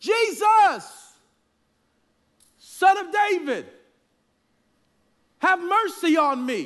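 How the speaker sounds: desperate shouting, loud and high.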